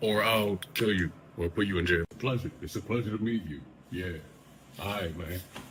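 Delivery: quiet, soft, menacing, threatening tone.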